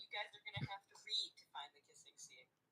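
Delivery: soft, hushed, teasing conspiratorial whisper.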